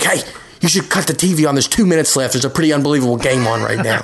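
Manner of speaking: mock cross, angry, irritated, fed-up scolding tone. Speaker urging their wife to watch the game, in a mock-angry voice. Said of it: "In my angry voice".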